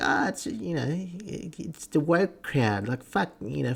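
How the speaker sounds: high, slow, drawn-out sarcastic mocking tone.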